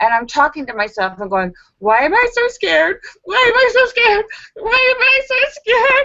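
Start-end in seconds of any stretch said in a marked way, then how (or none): 1.8-6.1 play-acted, very high, rising, frightened panic. Speaker acts out talking to themselves in the shower, imitating terrified panic. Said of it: "I'm suddenly in the shower going terrified".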